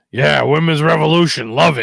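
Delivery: loud delivery, finishing with a little chuckle. Imitating Vince McMahon after a women's match: imitating Vince McMahon chuckling. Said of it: "Vince's little chuckle at the end".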